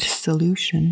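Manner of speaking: plain reading voice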